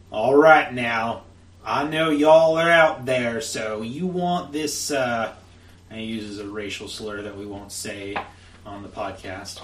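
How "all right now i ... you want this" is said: very loud, big, booming hollering call. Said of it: "calls out in a big booming voice".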